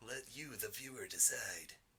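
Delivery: hushed true-crime podcast narrator voice. Proposing a Spotify poll to the audience, the host says: true crime narrator voice. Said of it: "that's my true crime voice".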